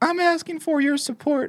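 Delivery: soft, wobbly, weak voice. Mocking a politician's appeal for support, weak wavering Ron DeSantis voice. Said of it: "that's what I hear in my ears when I hear his wavering voice".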